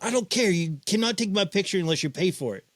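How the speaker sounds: put-on yelling, pitched high. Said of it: "yelled at me".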